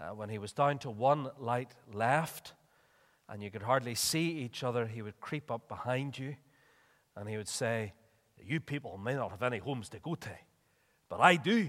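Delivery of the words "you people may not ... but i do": put-on Scottish accent that misses the mark. Quoting a man who crept up behind people in the dark, attempted scottish accent. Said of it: "Probably sounded more Pakistani than Scottish".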